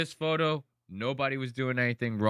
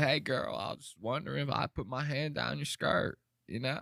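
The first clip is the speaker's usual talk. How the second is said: smooth, sweet-talking tone, laid on thick; 3 dB quieter than usual. Imitating how Bill Clinton would smooth talk a girl: Bill Clinton voice. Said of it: "you hit that voice".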